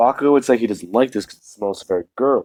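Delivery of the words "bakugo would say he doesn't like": ordinary delivery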